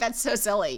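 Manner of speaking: usual speaking voice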